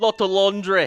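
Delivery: vague, Irish-sounding accent. Calling a play with a joke, told it sounds Irish: Irish-sounding accent. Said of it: "That sounds more Irish".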